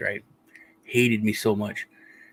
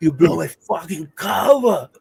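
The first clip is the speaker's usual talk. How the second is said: put-on drawn-out Austrian-accented scream; 6 semitones higher, 3 dB louder than usual. Act out what you screamed while ripping everything out in front of the nurse, retelling a scream as Arnold Schwarzenegger. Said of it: "screaming that at the top of my lungs in an Aus- Austrian accent".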